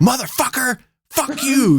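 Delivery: barking dog voice, pitched way up. Retelling how a dog on the driveway kept barking: voicing a barking dog. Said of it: "it's just barking at me".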